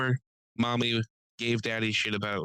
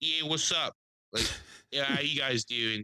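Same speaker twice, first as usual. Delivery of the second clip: mock rude, dismissive voice, higher; 3 semitones higher than usual. Retelling how a rude waitress talked to the next table: imitating a rude waitress. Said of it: "talking to them like trash".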